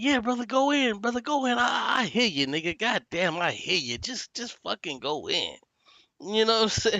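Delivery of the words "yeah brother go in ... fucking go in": urging, egging-on encouraging tone. Retelling how Si eggs the comedian on: imitating Si. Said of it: "And then Si be like".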